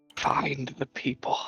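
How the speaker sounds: very soft whisper. Voicing an unseen voice the players hear nearby: faint whispering voice. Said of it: "very faint voice nearby".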